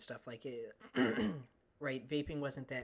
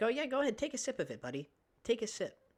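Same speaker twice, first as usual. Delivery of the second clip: sarcastic, taunting, goading tone, pitched up; 8 semitones higher, 4 dB louder than usual. Retelling a teacher confronting a student over his drink; retelling a teacher's taunt. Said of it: "she's like".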